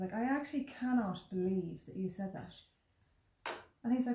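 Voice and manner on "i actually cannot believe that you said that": heavy, knowing, totally sarcastic delivery. Retelling own remark to a wedding guest: retelling own sarcastic remark. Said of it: "I was totally sarcastic".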